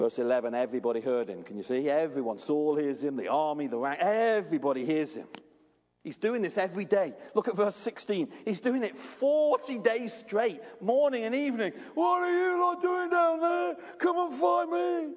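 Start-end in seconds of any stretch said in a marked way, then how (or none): 12.0-15.1 play-acted, very high, jeering, mocking shout. Explaining a Bible passage, acting out a man's taunt to the army, retelling a mocking shout. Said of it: "He's shouting, he's mocking".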